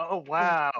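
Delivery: loud, calm, stoic, unmoved deadpan. Imitating the leader's stoic reaction: mock deadpan response. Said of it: "He's so stoic. He's just chill".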